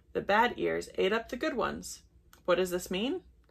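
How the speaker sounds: plain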